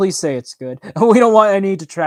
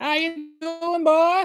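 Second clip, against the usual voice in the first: goofy put-on voice, much higher, slower; 13 semitones higher, 3 dB quieter than usual. Greeting someone in a sudden goofy character voice during a casual chat; silly put-on voice. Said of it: "I just broke out in that voice".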